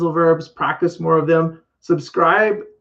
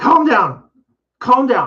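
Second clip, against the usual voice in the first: intense, forceful, well-enunciated delivery, pitched up; 7 semitones higher than usual. A teacher models a phrase for a learner to repeat, with more intensity. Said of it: "say it with more intensity".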